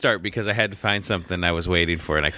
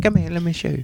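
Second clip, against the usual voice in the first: very high, bad, horrible put-on British accent; 11 semitones higher than usual. Imitating a beauty department worker who helped them: horrible british accent. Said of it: "That was a horrible accent".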